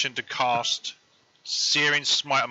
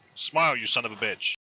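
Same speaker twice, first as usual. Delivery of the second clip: mocking, taunting tone. Playing a character taunting a creature down in its tunnel: taunting. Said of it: "try and taunt it".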